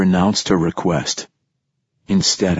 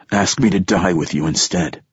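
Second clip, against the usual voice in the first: ordinary delivery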